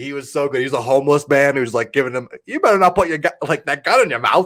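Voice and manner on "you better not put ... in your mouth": put-on high, little, pitched-up New Zealand accent. Retelling a homeless character's warning from a movie: imitating Rhys Darby's accent. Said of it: "I can't even do a New England accent".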